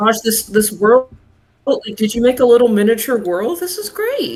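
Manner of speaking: earnest, supportive, high, encouraging cheer. Acting out reacting to her little miniature world: retelling an encouraging tone. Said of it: "I'm trying doing my best to encourage her".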